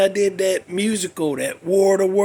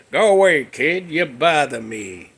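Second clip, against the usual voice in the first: cranky, irritated, fed-up, slowly drawn-out drawl; 4 semitones lower than usual. Showing how W. C. Fields talked: W. C. Fields voice. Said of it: "This is how he talked".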